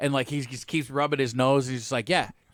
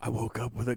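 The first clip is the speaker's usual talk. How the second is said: put-on gruff superhero voice, lower and quieter; 4 semitones lower, 7 dB quieter than usual. Trying an impression, slipping into a Batman voice. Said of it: "no, that's Batman".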